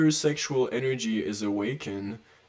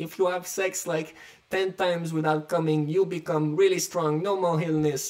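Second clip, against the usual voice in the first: put-on Chinese accent with pitch raised; 6 semitones higher than usual. Retelling what certain chinese kings would say, imitating a chinese accent. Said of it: "imitate the Chinese accent".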